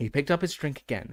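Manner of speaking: plain reading voice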